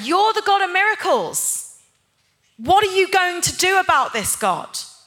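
put-on angry voice. Speaker recalls what they would say to god, retelling angry words to god. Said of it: "I would get quite angry with God".

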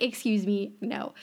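ordinary talk, nothing marked

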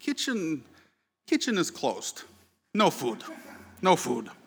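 put-on sneering, thick, slow Eastern European accent. Retelling how a chef answered a request for food, in a thick Eastern European accent. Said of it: "declared in a thick Eastern European accent".

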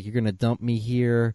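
frantic, desperate, panicked yell. Retelling a film scene, a character fighting off orderlies: imitating someone yelling. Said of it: "he's basically yelling".

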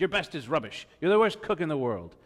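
rapid-fire, loud, high-pitched yelling. Retelling a dream where Gordon Ramsay yelled over their cannolis; Gordon Ramsay yelling impression. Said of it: "he was yelling at me".

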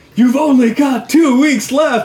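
very high, very loud, shrill, blaring announcer voice. Quoting the film's announcer: imitating the film's announcer. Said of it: "the announcer".

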